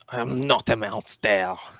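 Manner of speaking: put-on French accent. Trying out a line for a transformed character, in a French accent. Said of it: "French accent".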